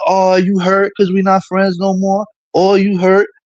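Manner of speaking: patronizing, sneering, condescending, mocking tone. Imitating a woman on Monica's panel taunting the speaker, mocking condescending imitation. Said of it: "She's over here on the panel being condescending".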